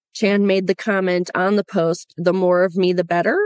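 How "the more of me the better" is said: better lifted up with a rising question tune. Reading a quoted comment ending in a question mark; question rise on better. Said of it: "I say it that way because it has an actual question mark".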